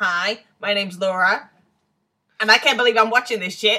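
very broad, loud, exaggerated American accent. A podcast co-host introduces herself on the watch-along episode, in her most American accent. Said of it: "I told Laura to do her most American accent".

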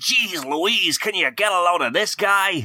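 put-on American accent, pitched very high. Having announced he'll talk in an american accent, the speaker starts in an american accent. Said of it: "I think I'm going to talk in an American accent".

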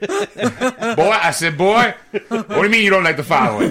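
loud, high-pitched cartoon rooster holler. Suddenly slipping into a cartoon voice mid-conversation, in a Foghorn Leghorn voice. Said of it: "I'm fucking Foghorn Leghorn tonight".

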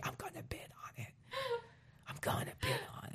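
very quiet, breathy, barely voiced whisper. Retelling what the other speaker just said: imitating a whisper. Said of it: "she just whispered to me".

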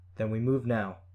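plain reading voice

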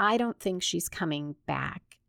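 normal talking voice

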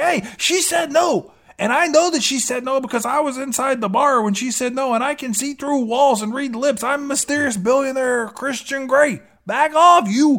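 mock, high-pitched, smug billionaire hero voice. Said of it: "he's like".

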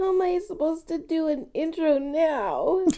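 teary drawn-out crying. Recording a podcast intro while the other speaker rubs them: crying while talking. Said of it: "It's making me cry".

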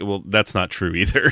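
ordinary delivery

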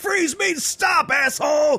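put-on shrill, very high, drawn-out action-hero screaming. Joking about a movie cameo, imitating Will Smith screaming one-liners. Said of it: "just screaming, like, really bad one-liners".

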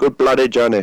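loud, put-on attempt at Indian accent. Podcast round table, each person takes a turn in their best Indian accent. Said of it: "in your best Indian accent".

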